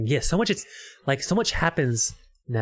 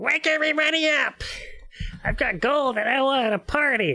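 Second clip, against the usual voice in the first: tiny frog voice, very high pitched; 12 semitones higher than usual. Retelling a story scene, doing No Face's frog voice. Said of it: "Frog's voice".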